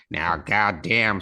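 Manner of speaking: put-on drill instructor voice. Retelling someone at the back doing a Dale Dye impression. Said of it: "somebody doing an impersonation of Dale Dye".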